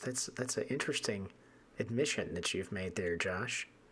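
very soft, hushed therapist-style voice. Responding to Josh after his admission, slipping into a psychologist voice. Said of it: "I'm kind of delving into my psychologist voice".

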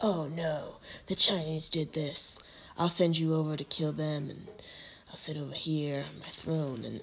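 raspy regal low voice. Describing war room scenes for her, the speaker does a raspy Queen Victoria impression. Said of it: "I don't know why I made her so raspy".

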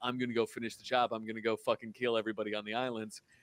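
ordinary delivery

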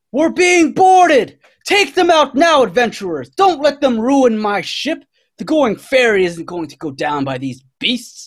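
very high, swooping captain's battle-cry yell. A ship's captain calls to the adventurers as the ship is boarded, yelling out. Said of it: "she just yells out".

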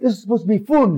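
put-on Yorkshire accent, Yorkshire vowels throughout. Speaker quotes a saying of Sally's, in Sally's Yorkshire accent. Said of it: "as Sally would say with her Yorkshire accent".

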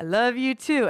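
slow, high-pitched Southern drawl. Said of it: "Ringo all of a sudden sounds like he's from the South".

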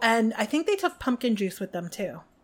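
ordinary talk

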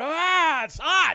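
very high-pitched roaring dwarf woman voice. Voicing a dwarf heard in a character's head: female dwarven roar. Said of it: "this female dwarven roar".

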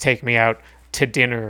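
plain

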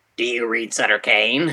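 eerie, dubbed-in, detached, disembodied voice. Retelling a movie scene with an axe-wielding man: weird disembodied voice. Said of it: "he says in a, like, a weird, disembodied".

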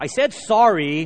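loud, slow, drawn-out, insincere indignant protest.

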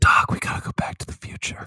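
hushed, soft whisper, leaned in close. Acting out a made-up movie scene: mock whisper as Michael J. Fox. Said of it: "he just whispers in the guy's ear".

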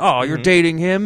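play-acted jealous, aggrieved, upset, petty indignant outburst. Retelling how the kid reacts at the door: imitating someone upset. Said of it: "he's upset about petty shit".

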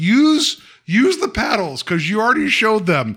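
yelling, pitched high. Retelling yelling at the TV during a scene: yelling at the TV. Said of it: "I kept yelling at the T V".

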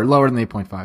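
plain

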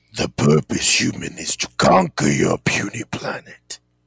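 rumbling voice, low and rough. Mid-conversation about family legacy, suddenly breaking in with a Megatron voice. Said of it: "that was Megatron".

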